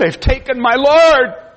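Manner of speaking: very high, put-on anguished cry full of hurt. Reading a Gospel passage aloud, voicing the woman's words, acting out an anguished cry. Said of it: "I hear the agony and the hurt".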